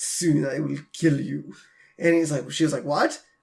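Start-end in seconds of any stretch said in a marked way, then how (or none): 0.0-1.5 put-on mutter, much quieter and lower. Retelling what a man said while giving a foot rub, acting out muttering under breath. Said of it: "he mutters to the, under his breath".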